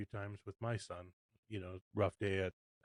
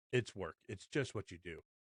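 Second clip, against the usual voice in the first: mock grumpy, curt, snapping tone. Retelling how a tired, grumpy dad answered a question: imitating dad snapping back. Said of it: "just snap back".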